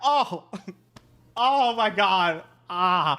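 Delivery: slow drawn-out pained groan. Retelling own reaction to stub-your-toe pain: imitating own reaction to medium pain. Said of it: "stub your toe pain".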